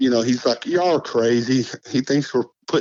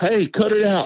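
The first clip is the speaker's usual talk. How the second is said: sudden, high-pitched yelling; 9 semitones higher than usual. Retelling how an uncle yelled at something throwing rocks: imitating someone yelling. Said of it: "my uncle yells".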